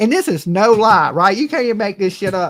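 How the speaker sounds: normal talking voice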